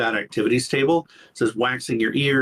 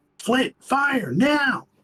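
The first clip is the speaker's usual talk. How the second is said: very high, in-character shouted yell. Yelling an order to Flint during a game turn: yelling in character. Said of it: "I'm yelling".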